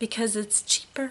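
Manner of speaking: hushed, secretive half-whisper. Speaker addresses viewers about other companies, in a half-whisper. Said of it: "I'm whispering like they can't hear me".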